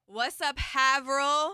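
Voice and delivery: stage shouting. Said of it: "shouting them out".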